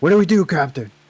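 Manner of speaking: loud, carrying yell in a character voice. Yelling in character to the captain on a tipping ship: in-character yell. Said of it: "I yell to Zarik".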